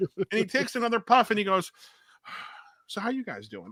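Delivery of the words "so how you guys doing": mock hushed, unbothered, very quiet, cool, easygoing tone. Retelling a man who had just yelled at them, imitating his calm, casual tone. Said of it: "cool as a cucumber".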